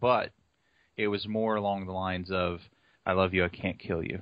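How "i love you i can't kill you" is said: creepy, unsettling, low put-on voice. Retelling what she really meant when she walked away, in a creepy low voice. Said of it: "love you like really creepy".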